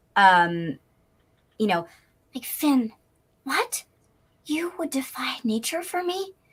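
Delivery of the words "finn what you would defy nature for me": super sweet, all sweetness, pitched-up voice. Showing the Adventure Time character's voice when asked: Flame Princess voice, very sweet. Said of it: "very sweet to".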